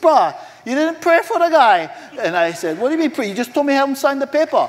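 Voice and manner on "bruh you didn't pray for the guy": put-on raised, high-pitched Hawaiian pidgin accent. Telling a story, quoting what Dominic said in his Hawaiian pidgin English. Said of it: "in his most eloquent pidgin English, Hawaiian dialect".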